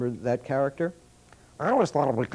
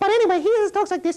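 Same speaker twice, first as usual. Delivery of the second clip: very high, loud, squeaky Italian-accented voice; 5 dB louder than usual. Introducing a little character named Squeak, speaking in his Italian accent. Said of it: "got an Italian accent".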